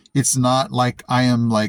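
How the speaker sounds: plain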